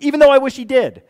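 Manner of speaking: put-on high, fast, loud Irish accent. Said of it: "I don't know why I was Irish there for a second".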